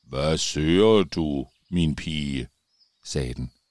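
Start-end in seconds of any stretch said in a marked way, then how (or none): 0.1-2.5 very slow, deep tree voice. Narrator reading a story, the talking tree addressing Siret: deep, very slow voice. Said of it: "en dyb og meget langsom stemme".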